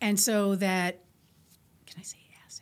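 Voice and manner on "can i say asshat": hushed, very quiet, breathy whisper, almost no voice. Asking the others if a rude word is allowed: whispering. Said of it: "you whispered it into microphones".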